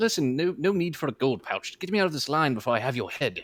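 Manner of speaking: commanding, demanding nobleman voice. Playing a lord flipping a guard a gold coin: in character as Lord Tobias. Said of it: "I am Lord Tobias".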